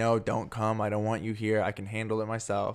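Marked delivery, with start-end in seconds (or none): none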